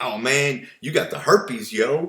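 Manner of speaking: slangy, super casual, street-slang doctor voice. Speaker imagines a doctor giving a diagnosis, imitating slangy doctor talk. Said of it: "would you ever go to a doctor that talk like that".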